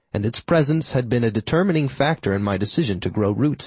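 ordinary delivery

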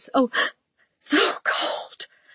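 small, breathless, desperate voice, near tears. A woman caught in the cold cries out, desperate, breathless little voice. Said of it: "in a desperate, breathless little voice".

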